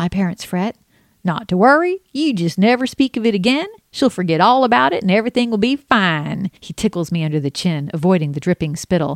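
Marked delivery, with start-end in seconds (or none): 1.2-6.5 put-on southern cartoon rooster voice, higher. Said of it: "who weirdly sounds like Foghorn Leghorn".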